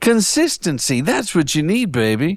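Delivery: high British spy voice. Podcaster mocking AI workflow ads, slipping into an Austin Powers voice. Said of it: "I just turned into Austin Powers".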